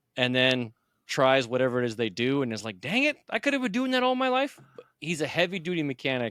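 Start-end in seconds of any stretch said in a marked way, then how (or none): 2.8-4.6 very high-pitched, squeaked-out outburst. Imitating a local influencer reacting after trying something. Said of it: "he goes".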